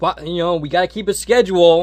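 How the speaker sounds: high, loud, blurted-out mock protesting tone.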